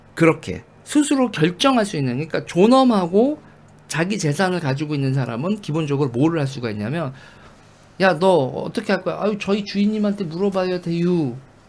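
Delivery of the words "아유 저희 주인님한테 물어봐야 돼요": put-on Chungcheong provincial dialect accent. Acting out a servant's reply, the speaker slips into a Chungcheong dialect accent. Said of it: "왜 이럴 때 충청도 사투리가 자꾸 나오지?".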